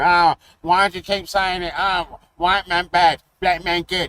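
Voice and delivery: put-on blubbering, whimpering, whiny baby-crying wail. Mocking critics who keep complaining: imitating a crying crybaby. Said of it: "instead of all this fucking crying like a baby".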